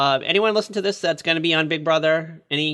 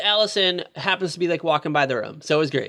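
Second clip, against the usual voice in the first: ordinary talk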